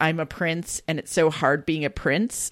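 normal talking voice

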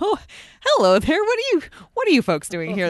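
casual, breezy, sing-song, unbothered stiff-upper-lip British voice. Retelling a character's casual first line amid bombs: Lady Jennifer voice, stiff upper lip British. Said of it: "very stiff upper lip British".

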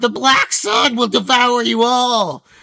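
shrill shout. Game master voices a figure at the Falling Rod Tavern door; shrill voice calling out. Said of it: "A kind of shrill voice calls out".

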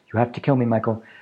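acted grave, earnest, serious and solemn tone. Recapping a scene, quoting Janet's line to Michael in a mock-serious voice. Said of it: "I have to say it in a serious voice".

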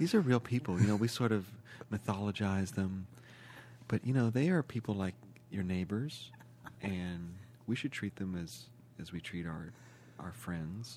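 very soft, soothing, gentle, caring, low murmuring therapist voice. Urged on to talk about celebrities as people: caring generic therapist voice. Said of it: "I see that you've got a very caring voice there".

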